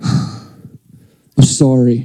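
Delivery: insincere grudging tone. Showing how siblings typically apologize, an insincere sibling apology. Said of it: "You can just feel it from the heart".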